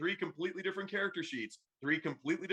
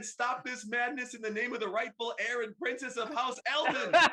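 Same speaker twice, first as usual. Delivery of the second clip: acted-out yelling, higher pitch; 5 semitones higher than usual. Speaker recounting a princess ordering the fighting to stop, retelling a yell.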